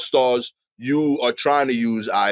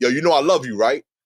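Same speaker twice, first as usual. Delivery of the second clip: put-on aggressive tone, higher pitch; 3 semitones higher than usual. Showing how one says i love you to a friend: imitating own aggressive delivery. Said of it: "I gotta say it, like, aggressive".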